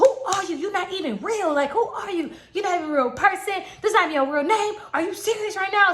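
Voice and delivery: put-on angry man voice, high and demanding. Retelling what a man said to her as he got mad; imitating an angry man. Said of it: "hearing him getting mad".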